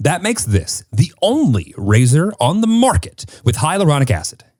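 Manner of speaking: really bold ad-style delivery, high-pitched. Rereading an ad line for a co-host, this time with a bold delivery. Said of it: "I'll say it really boldly".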